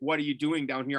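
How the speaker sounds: plain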